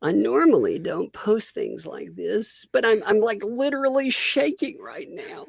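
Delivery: way up high, fake-teary and over-earnest voice. Mocking a sad Facebook auntie post: mock tearful overly earnest. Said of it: "like a sad Facebook auntie post".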